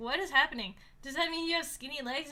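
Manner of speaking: plain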